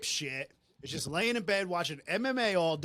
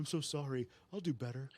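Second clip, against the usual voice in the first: sweet, nice, sorry-sounding, apologetic pleading tone; 2 semitones lower, 8 dB quieter than usual. Retelling a movie scene, the husband begging through the door: imitating a nice apologetic plea. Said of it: "all, like, nice, nice, like".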